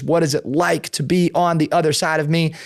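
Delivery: normal talking voice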